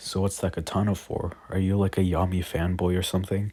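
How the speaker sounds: ordinary delivery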